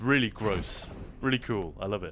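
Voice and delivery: normal talking voice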